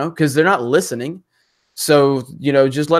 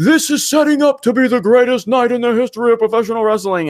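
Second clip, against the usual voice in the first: high, hyped wrestling announcer voice, main-event style; 8 semitones higher, 3 dB louder than usual. Imitating a wrestling announcer's weekly hype line: imitating Tony Schiavone. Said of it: "Tony Schiavone every night on Monday Night".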